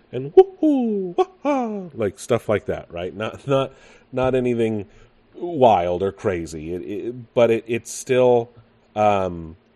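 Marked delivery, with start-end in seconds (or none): 0.3-1.8 very high, squealing, heroic whoops. Retelling what the former voice of Mario used to say: Mario voice. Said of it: "He'd be like".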